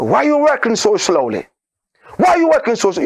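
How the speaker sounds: put-on sing-song Lebanese Arabic accent. Retelling how a man came up to a woman working the blender, imitating Jihad Shaban's Arabic accent. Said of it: "speak with the Arabic accent".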